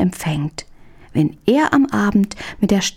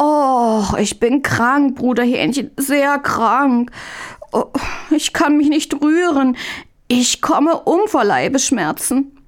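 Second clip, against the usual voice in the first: high, pained, groaning moan; 7 semitones higher than usual. Reading a story, Mündlein answers Brother Hähnchen from bed: groaning. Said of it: "Und Mündlein ächzte noch stärker".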